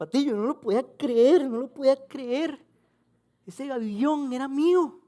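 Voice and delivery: acted choked-up cry, very high and loud, near tears. Retelling how Pedro nearly cried while telling the story, imitating Pedro near tears. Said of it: "y me hacía así".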